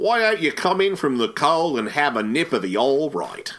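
put-on, laid-on cockney London accent. Podcast hosts riffing in character, mock cockney accent. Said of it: "We're trapped as recursive cockneys".

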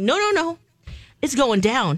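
plain

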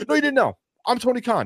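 very high, swooping impersonation voice. Joking about a wrestling partnership announcement: Tony Khan impression. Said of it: "That's my Tony Khan impression".

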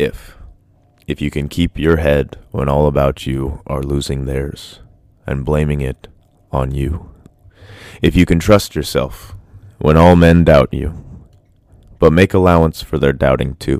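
deep, sick-sounding voice. Reading a poem aloud to take advantage of it: deeper voice from being sick. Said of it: "take advantage of the deep voice and actually read".

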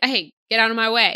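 rude, dismissive brush-off tone. Retelling a scene where a character shoves someone aside: Dave impression.

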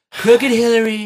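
very high, nasal, breathless, pinched and loud. Describing an impression video, the speaker tries a nasal, breathless Trump impression. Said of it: "it's a little nasally".

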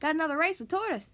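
plain reading voice

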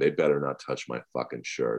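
acted panicky fretting, rushed and hushed. Retelling the day a gunshot victim was taken to hospital, retelling own panic. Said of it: "I start panicking, going".

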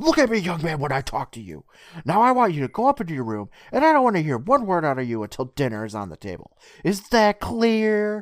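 shrill, loud, scolding screaming voice. Recounting a scene where Mom screams at Mike, imitating a screaming mom. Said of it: "and Mom screams".

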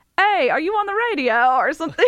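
put-on Australian accent, high and loud. Retelling what her friend from Australia asked, in an Australian accent. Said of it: "in her accent".

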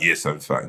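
put-on short, blunt, curt, rude tone. Retelling how a German man answered a greeting: imitating a rude, curt reply. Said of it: "he said it like that".

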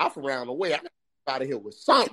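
put-on, swooping star voice laid on thick. Talking about leaving a job with something, Denzel voice. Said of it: "Like in my Denzel voice".

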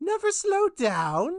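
very high, loud, squeaky, belted-out gnome voice. Asked by a friend to do an impression: Grandmaster of the Gnomes voice. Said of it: "I'm also doing the Grandmaster of the Gnomes".

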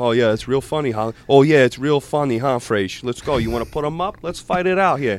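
attempted, put-on New Jersey New York accent. Recalling clubhouse banter, retelling what a player would say, in a Jersey New York accent. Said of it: "try to do like a Jersey, New York accent".

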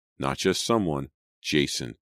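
ordinary delivery

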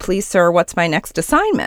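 ordinary delivery

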